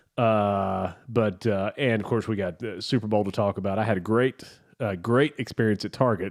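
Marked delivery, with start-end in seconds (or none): 3.7-6.3 heavily sarcastic, ironic, meaning the very opposite. Calling a terrible experience at target great: sarcastic. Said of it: "That's very sarcastic".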